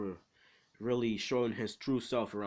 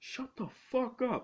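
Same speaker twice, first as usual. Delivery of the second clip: very high, sudden, fed-up yell, acted out. Retelling a story where a character shouts out mid-assembly: Izuku shouting. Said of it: "so he just shouts out in the middle of the assembly".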